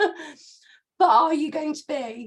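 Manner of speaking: very slow, high, voice giving out, struggling. Apologizing to viewers for a terrible cough, losing voice. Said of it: "I can't get my voice out".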